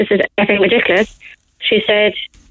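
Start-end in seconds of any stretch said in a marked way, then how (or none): none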